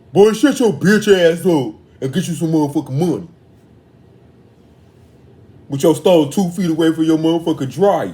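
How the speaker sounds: a hint of a put-on bass voice. Retelling what a man told a boy, in a deep bass voice. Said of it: "he said it in the deep voice".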